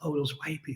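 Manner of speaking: soft, hushed, secretive whispered aside. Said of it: "they gotta whisper".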